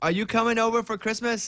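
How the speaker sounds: put-on Haitian accent. Speaker quotes a woman's question to him on the phone, in a Haitian accent. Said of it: "Is that your Haitian accent?".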